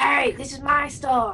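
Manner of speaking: high-pitched cartoon voice. Picturing a crossover where Krusty complains: imitating Krusty. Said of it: "Krusty's like".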